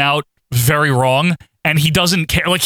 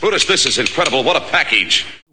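put-on Minnesota accent, sports interviewer style; 2 semitones lower than usual. Quoting a wrestling announcer's line: Gene Okerlund Minnesota accent. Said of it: "that's just his accent. I guess it's Minnesota accent".

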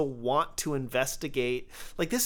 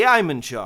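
sarcastic delivery; 5 semitones lower, 9 dB louder than usual. Retelling a movie scene where the militant turns, startled; retelling a sarcastic line.

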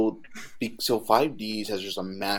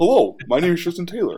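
bright, high, loud, big cartoon-style voice; 9 semitones higher, 7 dB louder than usual. Fan recalling the character's original dub voice; Tristan Taylor's first voice. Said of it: "Tristan's first voice".

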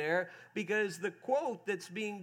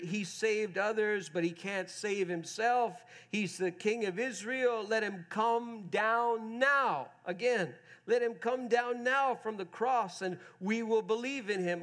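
ordinary talk

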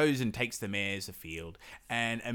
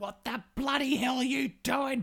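mock very high, livid, furious outburst. Retelling a fairy tale, voicing Baba Yaga at the returned horses: furious Baba Yaga voice. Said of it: "Baba Yaga is ropeable".

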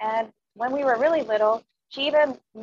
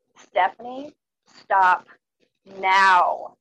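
put-on dangerous, all-knowing voice, deep, slow, menacing, raised; 3 semitones lower, 5 dB louder than usual. Retelling a mother's warning from the other room: imitating mom's deep, slow, dangerous tone. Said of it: "in a deep and slow and dangerous tone".

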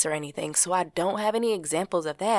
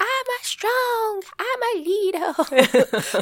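put-on very high, babyish voice speaking gibberish; 4 dB louder than usual. Quoting young Axel's confident affirmations, in Axel's little baby gibberish voice. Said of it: "his little baby gerberish voice".

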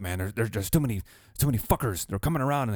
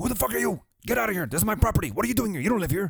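mock, put-on yelling at much higher pitch; 11 semitones higher than usual. Retelling how a man with a gun yelled at these dudes; retelling a man's yell. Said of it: "he's yelling at all these dudes".

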